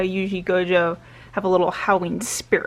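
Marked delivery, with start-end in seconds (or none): none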